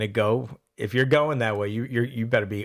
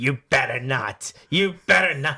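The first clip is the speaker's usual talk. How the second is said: nagging half-yelled tone; 3 semitones higher than usual. Retelling how a mother pushed about voting: imitating mother screaming. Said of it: "She used to scream".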